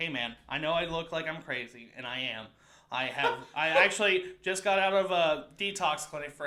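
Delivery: ordinary delivery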